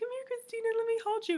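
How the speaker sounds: very high, tender, sweet, loving tone. Showing how she talks to her little god baby, imitating her sweet, loving talk. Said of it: "whenever I want to be sweet and, and loving".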